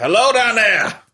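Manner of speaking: very high, carrying, belted-out yell. Calling out in character from a hallway to a robot: belting out a yell. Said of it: "I'm just gonna belt out".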